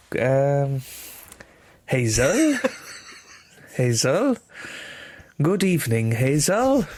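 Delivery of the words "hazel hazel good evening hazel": careful, slow, drawn-out put-on Welsh accent. Asked to say it again in welsh, in a welsh accent. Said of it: "Can you say that again in Welsh".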